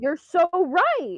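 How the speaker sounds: sarcastic, mocking tone with rage underneath. Answering another player's claim in a group discussion: sarcastic. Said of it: "That sounded so sarcastic".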